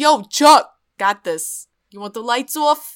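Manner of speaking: loud, fake put-on Philadelphia accent. Imitating something that suddenly talks with a philly accent, addressing chuck. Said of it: "it gets a Philly accent and it's like".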